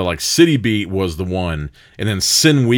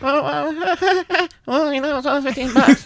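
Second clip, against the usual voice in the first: put-on pained voice, higher pitch. Retelling what Andrew said to the speaker: Andrew impression, sounding in pain. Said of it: "That is my first ever Andrew impression".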